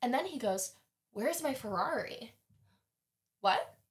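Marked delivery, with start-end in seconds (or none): 1.1-2.3 put-on drunken-sounding speech. Retelling what he asked after the ride back: imitating a drunk person. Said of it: "He's so drunk".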